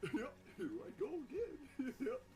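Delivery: high, swooping cartoon dog voice. After calling the first try bad, giving a better Goofy impression. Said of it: "I can give a better one".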